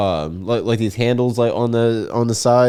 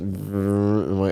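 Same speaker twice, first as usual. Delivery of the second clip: ordinary talk, nothing marked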